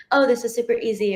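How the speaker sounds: normal talking voice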